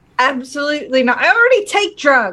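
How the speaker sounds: blunt, emphatic outburst. Answering a player who says to take drugs: said really loud. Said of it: "I said that really loud".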